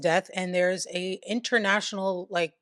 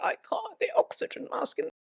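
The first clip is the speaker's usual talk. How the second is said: put-on feeble voice, higher. Retelling the man refusing to show his tattoos: imitating Knight's feeble excuse. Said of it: "He's like".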